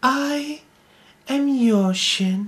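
hushed whisper. Pressed by a tormentor to declare his name, whispering. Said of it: "When you whisper like that".

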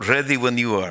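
put-on Russian-accented voice. Joking about a tech CEO meeting, the comic quotes a voice in a Russian accent. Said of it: "[ Russian accent ]".

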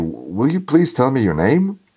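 hoarse, pained croak. Styopa, pulling on his trousers, asks someone their name, hoarse voice. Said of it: "asked hoarsely".

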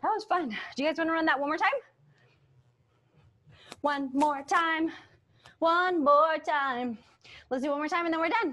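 breathing heavily, winded and out of breath. Leading a dance routine, asking everyone to run it once more, breathing heavily. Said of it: "I'm breathing really heavy".

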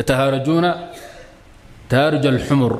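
ordinary talk, nothing marked

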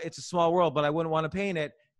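very excited, very fast, rattled off.

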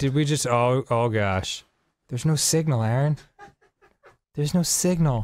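panicked, freaking out, broken-off alarmed voice. Reacting as the game signal suddenly cuts out: panicked. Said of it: "I'm freaking out, dude".

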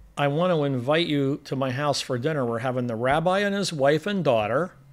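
ordinary delivery

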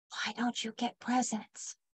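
soft, very quiet whisper. Narrator reads a boy leaning over to a girl at play, whispering. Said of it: "leaned over and whispered to her".

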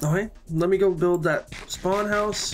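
talking with mouth full. A gamer talks to viewers while eating, talking with mouth full. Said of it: "don't mean to talk with my mouth full".

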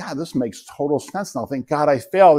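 plain

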